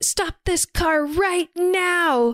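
slow, high-pitched yelling.

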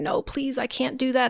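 put-on pleading. Retelling a story, a man answering a woman in a hospital, retelling someone begging. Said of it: "he's begging her".

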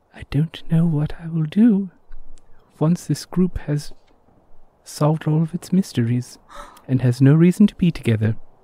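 confiding, intimate aside in a character voice. Playing a character alone, away from the group, speaking into a wand: half-whispering in character. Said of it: "And he whispers into it".

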